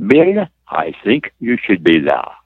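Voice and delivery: put-on German-Swiss accented English, swooping and sing-song. Retelling how Elizabeth answered his thank-you routine, in her German-Swiss accent. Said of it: "in her German-Swiss accent".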